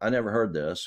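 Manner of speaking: normal talking voice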